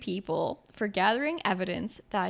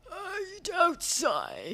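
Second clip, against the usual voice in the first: put-on old man voice, much higher; 7 semitones higher than usual. During a tea-tasting bit with the others, Muppet Show old man voice. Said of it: "you really think you sound like an old man".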